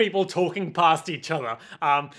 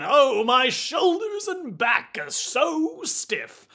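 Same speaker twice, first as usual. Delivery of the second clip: high-pitched, put-on elderly man voice; 6 semitones higher than usual. Playing a character who sits down like an old man: old man voice. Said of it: "like an old man".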